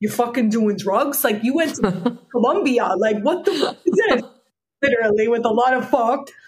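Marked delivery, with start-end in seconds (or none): 0.0-4.2 put-on cute Bronx accent, laid on thick. Retelling his reaction on hearing about the psychoactive plant, imitating a cute Bronx accent. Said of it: "with his cute Bronx accent".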